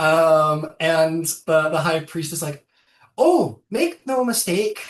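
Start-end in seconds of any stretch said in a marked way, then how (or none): 3.2-4.9 Scottish-sounding voice, higher and louder. Voicing the high priest answering Asuka's look: Scottish accent. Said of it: "I'm not Scottish".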